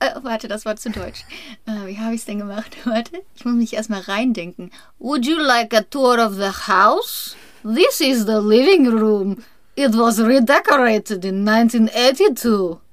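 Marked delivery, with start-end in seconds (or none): 5.0-12.8 put-on Russian accent on English, raised pitch. Speaker demonstrates an accent during a German conversation, Russian accent in English. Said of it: "Meinen russischen Akzent auf Englisch".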